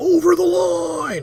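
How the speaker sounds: very high, slow, loud scream.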